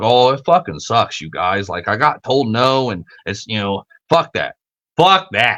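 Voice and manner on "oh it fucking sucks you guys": low, fake sorrowful tone. Talking to live viewers after being told no, the speaker puts on mock sad. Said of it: "do you hear me being all sad".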